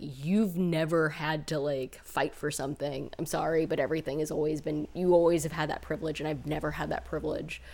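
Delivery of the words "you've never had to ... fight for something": plain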